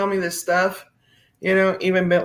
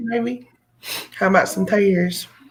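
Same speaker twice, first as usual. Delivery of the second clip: put-on rural country backwoods accent. Joking about sounding like they're from the sticks, in an accent from the sticks. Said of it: "I sound like I'm from the sticks".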